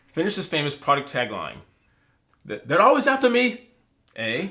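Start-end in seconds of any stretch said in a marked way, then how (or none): 2.5-4.6 very high, bad fake Irish accent drifting Jamaican. Finishing a famous product tagline from a list of options, in a bad irish accent. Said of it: "when you do a bad Irish accent, it sounds Jamaican".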